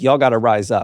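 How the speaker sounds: ordinary delivery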